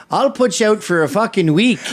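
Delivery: put-on Canadian accent. Retelling a line from a fight that someone said: imitating a canadian accent. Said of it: "he'd been doing a Canadian accent all day".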